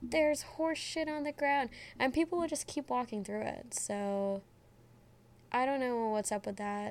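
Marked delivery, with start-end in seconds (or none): 0.0-1.7 put-on yelling, high. Retelling how guys behind them warned people, retelling a yell. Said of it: "they would start yelling".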